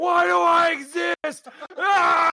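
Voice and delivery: very high, very slow, drawn-out wail of anguish. Voicing a half-skeleton half-zombie rising from the ground: screaming in anguish. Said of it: "it's just coming out screaming".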